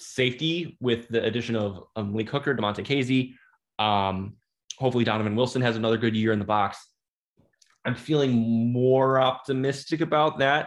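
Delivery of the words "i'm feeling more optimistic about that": careful, hedged, cautious, guarded tone. Discussing a football team's defense, sounding hopeful: cautious tone. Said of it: "so much caution on my, in my voice".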